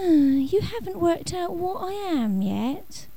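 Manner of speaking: weary, patient, high, slow, sighing delivery. A creature answers the staring young man: sighing. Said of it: "the creature said with a sigh".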